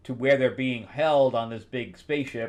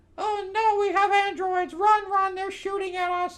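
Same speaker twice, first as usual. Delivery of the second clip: very high, slow, squeaky cartoon voice. Narrating a scene where an android appears and shooting starts, in a Mickey Mouse voice. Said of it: "That's my Mickey Mouse shooting voice".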